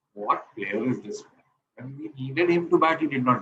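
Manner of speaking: usual speaking voice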